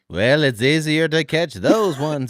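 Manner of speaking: attempted put-on Yiddish accent. Adding a joke line to a tunnel story, attempted Yiddish accent. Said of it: "I was going for the Yiddish again".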